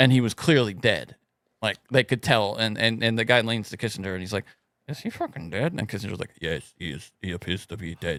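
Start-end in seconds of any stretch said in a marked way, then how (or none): 4.9-8.2 low, very quiet murmur. Telling how a guy leaned over to ask Kissinger whether Mao was dead, do a Kissinger impression. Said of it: "another example of your wonderful impressions".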